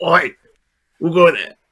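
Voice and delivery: put-on orc voice. Voicing an orc who hears a creak on the gangplank: orc voice. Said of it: "the orc turns around and he goes".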